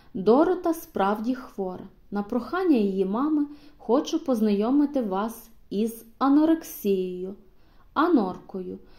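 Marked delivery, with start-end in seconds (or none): none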